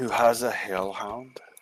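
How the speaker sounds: muttering under breath. Speaking in character at a game table, muttering under breath. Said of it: "Under my breath, I'm gonna go".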